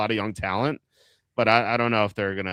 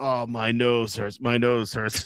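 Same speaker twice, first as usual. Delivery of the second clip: put-on, slow, drawn-out griping. Retelling a swim teammate's excuse to leave practice: imitating a teammate complaining. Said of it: "He's like".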